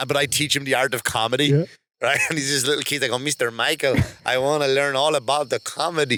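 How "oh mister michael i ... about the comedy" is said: bad put-on Norwegian accent, much slower. Pitching a martial-arts-movie-style comedy, the speaker voices the little kid: bad Norwegian accent. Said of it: "he's Norwegian".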